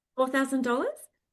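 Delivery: upward question-like rise on dollars. Recalling a first meeting with hesitancy in their voice: rising pitch on dollars. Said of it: "my voice went up at the end".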